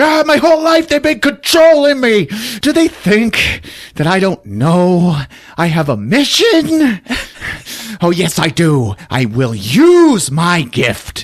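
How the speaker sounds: play-acted high, hysterical ranting outburst. Retelling the movie scene where Sam leaves in his car, imitating Sam hysterical. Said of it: "He's hysterical in his car".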